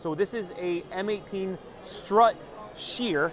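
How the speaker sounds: slow, deliberate, careful, spaced-out delivery. Presenting a Milwaukee tool with a name that is hard to say: saying it slowly. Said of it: "Gotta say that slow".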